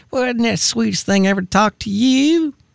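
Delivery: put-on high, sweet southern accent. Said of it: "she's so Southern".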